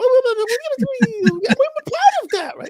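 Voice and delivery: very high, very slow, silly puppet voice. Pitching a puppet idea, the speaker talks in a stupid little puppet voice. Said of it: "like a stupid little puppet".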